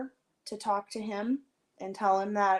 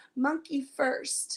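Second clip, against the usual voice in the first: mock scream in a child voice; 7 semitones higher than usual. Retelling how a child screamed a name at the top of her lungs while the speaker was away. Imitating a child screaming. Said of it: "just screaming, sobbing".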